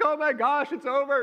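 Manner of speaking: very high, bawling crying voice. In the office, the speaker reenacts breaking down in front of her, retelling crying. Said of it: "and I'm just like crying".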